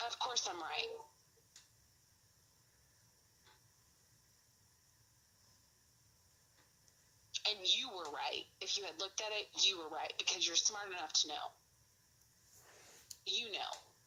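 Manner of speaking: heated, cross, angry insistent tone. Speaking to Renee during an argument; angry. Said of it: "You sound so angry".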